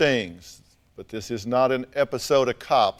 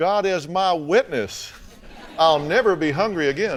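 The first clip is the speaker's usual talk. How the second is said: put-on Virginia accent, higher; 4 semitones higher than usual. Quoting another speaker's earlier words back to her: imitating a virginia accent. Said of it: "in your best Virginia accent".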